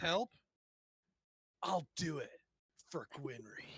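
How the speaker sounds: fantasy half-orc warrior voice. A player speaks in character after the others question the voice, half-orc warrior voice. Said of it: "That's his voice".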